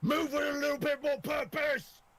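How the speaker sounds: far-carrying yell, very high pitch. Playing a character yelling out the window at guards: in-character yell. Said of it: "I'm gonna yell to the point that they hear me".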